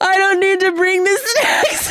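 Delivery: mock crying through words, very high sobbing wail. Retelling a tearful first daycare drop-off, imitating own past sobbing. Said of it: "I was, like, sobbing".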